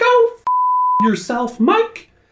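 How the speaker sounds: put-on squeaky mouse voice. Signing off the video in character: Sybil Shepherd impression. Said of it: "Why do I sound like Mickey Mouse?".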